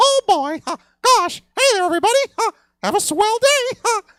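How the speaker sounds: very high, loud, squeaky mascot voice. Describing seeing the mascot walking backstage at Disneyland: Mickey Mouse voice. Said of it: "you're eventually going to see Mickey Mouse trotting along".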